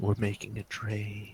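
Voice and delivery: slow, drawn-out, secretive whisper. Suggesting how a character quietly says a line in the game: whispered line. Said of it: "It's kinda like a whispered".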